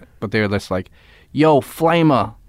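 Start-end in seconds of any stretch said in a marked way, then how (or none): 1.3-2.3 put-on higher Boston accent, called out. Retelling coworkers at the forklift job taunting him: Boston accent from The Departed. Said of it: "You know that accent".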